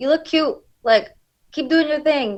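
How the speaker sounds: high-pitched, shouted.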